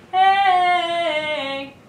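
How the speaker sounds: high, loud, forward hey without nasal tone.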